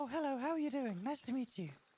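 high, polite, put-on feminine voice. Imitating a friend's feminine voice from when they first met: imitating Yumi's feminine voice. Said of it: "Your Fem voice is terrible".

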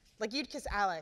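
ordinary delivery, nothing marked

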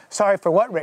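ordinary talk, nothing marked

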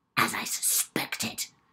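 hissing, spiteful voice. Reading a story, a woman finds the bathtub water draining and, hissing. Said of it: "she hissed".

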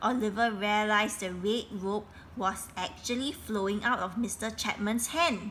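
plain

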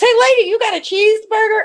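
shrill, very high, shouted holler. Retelling a man yelling at a departing lady from the waiting room, retelling a yell. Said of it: "And he yells".

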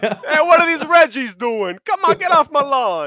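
put-on New York accent. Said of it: "it just kind of happened with a New York accent".

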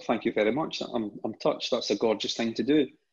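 ordinary delivery

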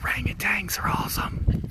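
soft, unvoiced whisper.

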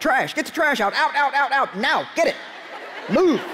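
hard, sharp, harsh army-sergeant voice. Parent reenacting telling the kids to take the trash out, like an army sergeant. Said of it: "without sounding like an army sergeant".

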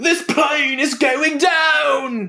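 put-on British accent, very high shout, "down" stretched out. Pitching a Con Air parody where he is British, doing Nicolas Cage with British accent. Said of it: "But he has a British accent".

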